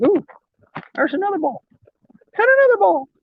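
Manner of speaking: very high, squeaky cartoon voice. Finding one ball after another, the speaker slips into a Mickey Mouse voice. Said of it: "my Mickey Mouse voice is coming out".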